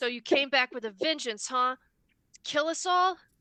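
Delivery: seething, furious, shrill and very loud. A character confronts someone he thought was dead, seething with rage.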